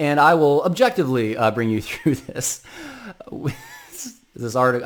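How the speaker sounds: words spoken through stifled, held-back laughter. A podcaster starting on an article they find funny, holding back laughter. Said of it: "I'm holding back laughter a little bit".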